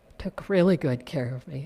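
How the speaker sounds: voice brought right down. Thanking the youth education director for good care, in a lowered voice. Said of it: "I'm lowering my voice".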